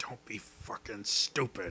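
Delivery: low mutter under the breath. Voicing a character as the party turns away: muttering under his breath. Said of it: "mutter under his breath".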